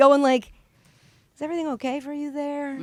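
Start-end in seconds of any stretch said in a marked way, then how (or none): 1.3-2.8 acted, very hushed, soft, caring, sympathetic voice. Retelling a question she put to another person, acting out sympathetic concern. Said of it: "looking at Ernestine with such sympathetic eyes".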